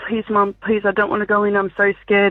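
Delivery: put-on scared, pleading child voice. Retelling how her son clung to her legs before school: imitating a child begging. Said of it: "clinging to my legs and begging me".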